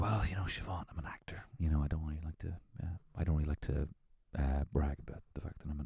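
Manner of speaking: low, hushed, playful, stumbling murmur. Acting out what he says to Siobhan: imitating someone speaking quietly. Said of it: "he's speaking with a low volume now".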